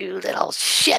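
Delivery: horrific crone's raspy, creaky, mild screech. Voicing an unseen monster screeching down the hallway: horrific woman screeching. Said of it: "It's yelling and this giant".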